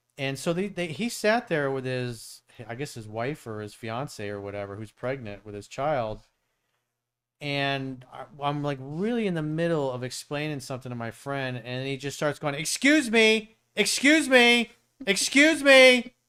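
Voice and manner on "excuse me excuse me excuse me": shrill, booming, high, drawn-out, insistent, obnoxiously escalating calls. Retelling a stranger interrupting a conversation: imitating someone getting louder and louder. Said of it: "louder and louder and more obnoxious".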